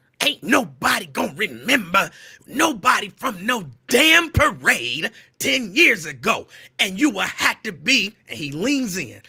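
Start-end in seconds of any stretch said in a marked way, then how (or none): 0.2-8.2 growling, angry half-yell, lightweight scream. Retelling Rickey Smiley yelling over his shoulder, imitating Rickey Smiley's angry growl. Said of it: "this is my Ricky Smiley angry voice".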